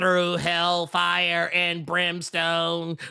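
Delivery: put-on electrolarynx-style voice. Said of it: "He's doing the voice box gimmick".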